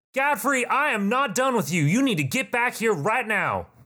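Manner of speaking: very high-pitched insistent yell. A narrator voices someone shouting after a back door slams open, shouting. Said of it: "you hear someone shout".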